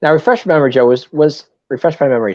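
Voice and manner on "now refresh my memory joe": very fast, rushed, rattled off at top speed. Talking Phillies history, the speaker asks Joe a question, very fast. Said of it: "I said that so fast".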